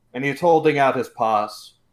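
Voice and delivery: plain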